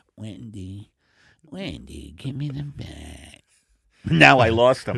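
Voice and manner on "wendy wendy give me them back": lazy, bad movie-star voice. Doing a bad impression: Jack Nicholson voice. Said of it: "bad Jack Nicholsons being done by comedians".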